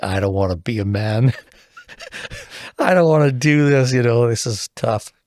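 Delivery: sobbing, tearful voice, crying through tears. Retelling falling into a bark pile at four in the morning: retelling his own crying. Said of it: "just crying, like".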